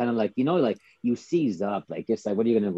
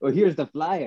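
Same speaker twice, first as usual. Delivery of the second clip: put-on French accent, pitched higher; 6 semitones higher than usual. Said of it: "in the French accent".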